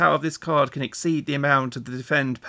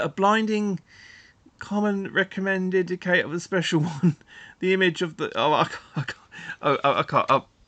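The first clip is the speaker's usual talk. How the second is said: reading collapsing into helpless, high, breaking-up laughter; 5 semitones higher than usual. Trying to read odd card text aloud, laughing too hard to read. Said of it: "you're gonna have to read it yourselves".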